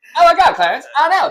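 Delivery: very high, loud cartoonish Canadian voice. Showing where the voice comes from: South Park Canadian voice. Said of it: "that's where I get it from".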